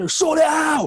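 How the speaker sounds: very loud, very high, shrill, furious screaming rant. Retelling how Mrs. Owen came into class screaming at your friend, imitating Mrs. Owen screaming. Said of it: "she's going mental".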